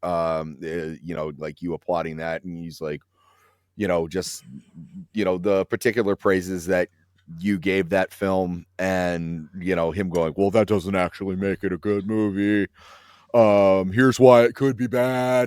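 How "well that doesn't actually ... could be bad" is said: put-on slow drawling voice, louder than usual. Imitating how a critic would dismiss praise of a film: imitating a critic's voice. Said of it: "I like the impression".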